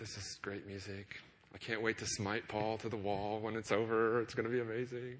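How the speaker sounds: put-on whisper. Picturing Saul listening to David's harp, acting out Saul whispering to himself. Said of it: "he's whispering to himself".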